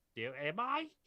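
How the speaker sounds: put-on twangy New Zealand accent. Imitating a character who is told she's special: twangy new zealand accent. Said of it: "I'm just gonna speak like a twangy, uh, New Zealander".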